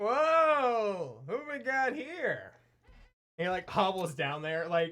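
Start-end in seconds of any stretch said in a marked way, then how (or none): 0.0-2.5 put-on high, very slow drunken drawl, "whoa" stretched. Voicing a wasted guard who hears someone in an alley: drunk guard. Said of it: "So he's like".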